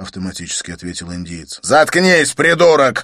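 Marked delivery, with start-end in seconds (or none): 1.6-3.0 loud, high, barked-out voice. Narrator voicing Kankenon, cutting off his henchman Govinda, barked. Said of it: "рявкнул Канкэнон".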